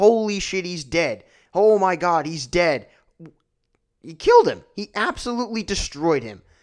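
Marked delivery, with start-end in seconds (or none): 0.0-4.6 mock loud shocked screaming, frantic. Recalling a choke slam through the announce table, retelling own screaming. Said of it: "I was screaming".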